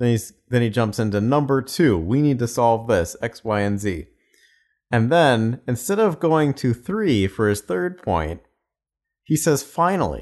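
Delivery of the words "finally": put-on fed-up, very exasperated, high voice. Analyzing a speaker's delivery and imitating his word: imitating an exasperated voice. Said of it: "says "finally" in a very exasperated voice".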